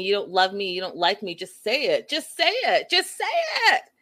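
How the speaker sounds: screaming, each repeat climbing and swooping. Recounting a scene, the speaker acts out a woman screaming at Pedro: retelling her screaming. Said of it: "she starts screaming".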